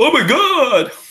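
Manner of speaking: very high, shrill, frantic, panicked cry. Game narrator voicing a guard whose weapon just flew to the floor: panicked guard voice. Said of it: "a panicked voice of the guard as it says".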